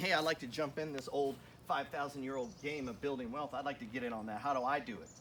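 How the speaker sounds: usual speaking voice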